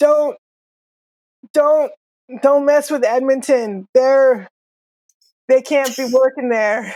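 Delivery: pained groaning thug voice, spitting between words. Voicing a beaten man on the ground who spits and groans: groaning, spitting injured thug. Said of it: "he spits and he, he groans and he says".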